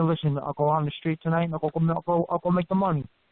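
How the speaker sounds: ordinary talk, nothing marked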